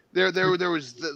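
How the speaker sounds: ordinary delivery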